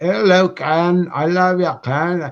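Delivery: put-on faltering Scottish accent, high and drawn out. Thanking a listener who lives in Scotland, doing Liz's Scottish accent. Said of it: "you should hear her her accent".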